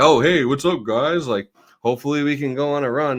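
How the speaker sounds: offhand douchey manner. Mocking a football player's video greeting: imitating a douchey greeting. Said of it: "it had that energy".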